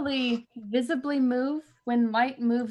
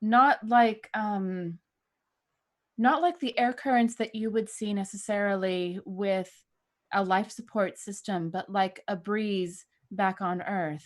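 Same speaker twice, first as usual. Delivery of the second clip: very slow delivery, words spaced out one by one; 4 semitones lower than usual. Replying in character over a radio link with an echo: speaking very slowly. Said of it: "Replying very slowly".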